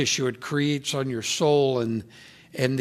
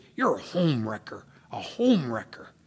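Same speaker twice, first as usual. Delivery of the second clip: quieter, mock-hateful tone; 2 semitones lower, 4 dB quieter than usual. Speaker recalls their mother speaking to them; retelling a hateful voice. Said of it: "in a real hateful voice".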